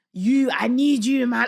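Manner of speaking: loud, slow, deliberate put-on devil voice. Retelling a voice heard speaking to his dad: imitating the devil's voice. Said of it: "hearing the devil fully saying to my dad".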